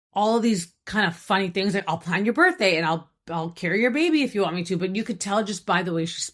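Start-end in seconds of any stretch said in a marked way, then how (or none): 1.8-4.7 mock-sarcastic, imitated sarcastic tone. Retelling what a woman said to the man talking with her, retelling a sarcastic remark. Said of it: "it's really sarcastic".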